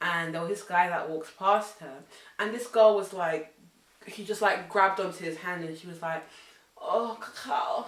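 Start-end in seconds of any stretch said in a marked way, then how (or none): 6.8-7.9 put-on drunken speech, pitched higher. Retelling how a friend grabbed a stranger's hand: imitating drunken speech. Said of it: "really drunkenly".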